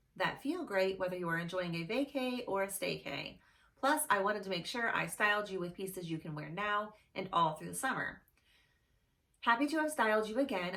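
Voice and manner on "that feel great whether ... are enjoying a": usual speaking voice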